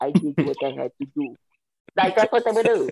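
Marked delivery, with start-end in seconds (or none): 0.0-1.4 light, put-on Russian accent. Talking to sis, acting out what these people would say; little Russian accent. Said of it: "I love your little Russian accent".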